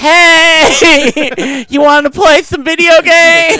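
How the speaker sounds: spaced-out slow drawl. Voicing a juvenile snake after a news story about it: voice like a stoned psychedelic person. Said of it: "Why does it sound like the psychedelic person".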